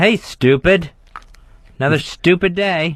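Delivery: mocking, taunting voice. Playing the inner voice in a role-play: taunting inner voice. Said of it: "you play the part of your inner voice".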